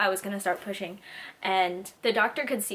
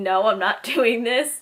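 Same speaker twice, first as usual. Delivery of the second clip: put-on tearful crying in a loud, raised voice; 2 semitones higher, 9 dB louder than usual. Retelling being wheeled into surgery against her wishes, retelling own crying. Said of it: "crying and saying".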